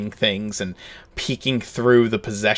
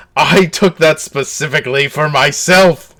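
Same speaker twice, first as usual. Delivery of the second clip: very distressed voice, higher and louder; 5 semitones higher, 8 dB louder than usual. Voicing a prisoner whose cheese was taken: incredibly upset NPC. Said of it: "he just looks incredibly upset by this".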